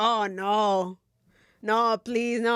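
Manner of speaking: put-on laughing, pleading voice. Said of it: "And we're laughing, right?".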